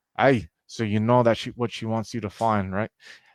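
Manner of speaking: easy, relaxed put-on Scottish accent. Voicing a character who speaks as a garage door opens: Scottish accent. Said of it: "you hear in the Scottish accent".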